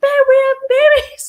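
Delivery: very high, shrill, loud screaming yell. Retelling how he came in screaming about babies: imitating someone screaming. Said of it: "he's just screaming".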